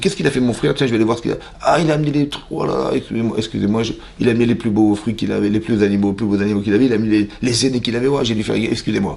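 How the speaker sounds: ordinary talk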